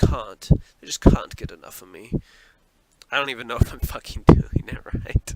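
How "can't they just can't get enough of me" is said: loud British accent, laid on for show. Speaker tries out a British pronunciation of can't, in a put-on British accent. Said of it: "That's how they say it, right?".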